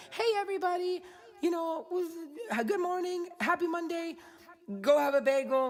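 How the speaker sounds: put-on voice without rasp. Imitating how Randy greets everybody else: imitating Randy greeting everyone. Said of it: "not with that sexy rasp that I have".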